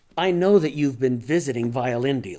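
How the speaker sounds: plain reading voice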